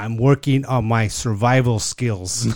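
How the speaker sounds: put-on dead serious voice. Retelling what a retired Marine said: imitating someone dead serious. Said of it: "he looks at me dead serious".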